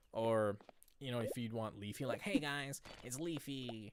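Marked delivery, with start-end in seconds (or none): 2.2-3.9 high-pitched, slow put-on voice with drawled hello. Imitating Leafy's greeting: high-pitched Leafy impression. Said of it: "because we have this high-pitched voice".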